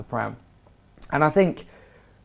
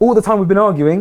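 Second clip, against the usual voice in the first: loud, high shouted voice. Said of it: "He's shouting back at me".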